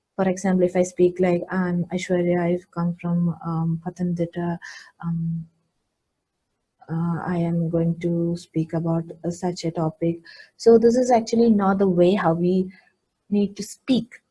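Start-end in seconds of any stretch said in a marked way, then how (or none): 1.5-10.2 flat monotone, much lower and quieter. Speaker shows the wrong way to introduce yourself: monotonous delivery. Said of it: "you should not be monotonous while you speak".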